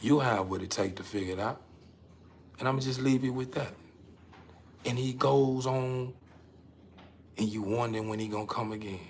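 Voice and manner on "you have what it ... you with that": quick, quiet, soft-spoken, reassuring fatherly voice, never raised. Speaker acts out the Father speaking to a listener: never loud, soft-spoken. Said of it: "The Father is never loud".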